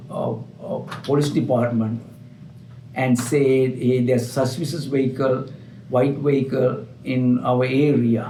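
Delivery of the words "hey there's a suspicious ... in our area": ordinary delivery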